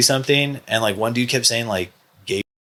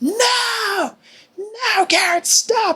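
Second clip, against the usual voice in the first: very high, long drawn-out scream, acted out. A bouncer retells his boss screaming at him to stop, imitating a scream. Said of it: "my boss just screams like".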